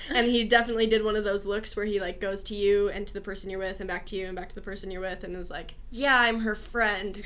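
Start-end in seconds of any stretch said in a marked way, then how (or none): 5.9-7.2 mock speaking through clenched teeth. Recounting what a man said on meeting her and a companion, mimicking gritted teeth. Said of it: "through gritted teeth".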